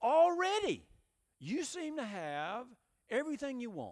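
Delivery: sarcastic, rising at start. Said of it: "rather har-, sarcastically".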